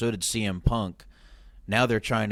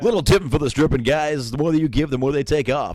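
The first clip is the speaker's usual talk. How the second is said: loud, pitched-up, hyped club DJ announcer voice; 5 semitones higher, 6 dB louder than usual. Riffing with another speaker: stripper DJ voice. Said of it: "my stripper D J voice".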